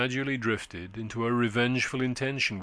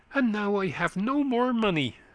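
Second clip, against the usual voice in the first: excited outburst, very high, leaping and swooping pitch; 10 semitones higher than usual. A man who has just lost his stakes at the game exclaims excitedly.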